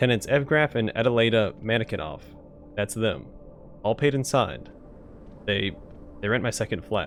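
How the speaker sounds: ordinary delivery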